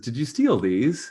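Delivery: amused speech broken by laughter. Voicing a character who finds boots in the cart: laughing while speaking. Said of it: "Vina laughs".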